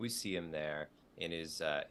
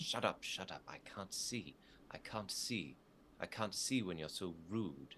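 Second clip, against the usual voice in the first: mad, fuming, ranting angry fairy voice. Voicing the fairy as it starts to get mad, angry fairy. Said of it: "The fairy starts to get mad".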